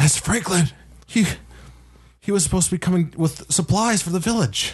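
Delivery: stunned, gasping words. Game master voicing a villager who sees a head fall nearby: gasping villager. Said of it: "another villager that gasps".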